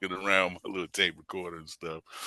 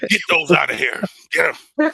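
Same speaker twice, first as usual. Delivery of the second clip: put-on scolding tone, higher and louder; 10 semitones higher, 9 dB louder than usual. Retelling how a religious grandmother reacted to albums: imitating grandmother telling him off. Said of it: "She was like".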